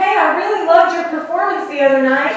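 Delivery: very loud, high, called-out shout. Retelling what a man yelled to the speaker on the sidewalk: retelling a yell out. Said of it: "he yells out to me".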